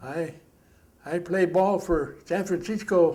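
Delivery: put-on Japanese accent, called out loudly. Retelling a holler heard before a Marine replied, imitating a Japanese accent. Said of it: "in a Japanese accent".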